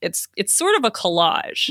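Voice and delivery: plain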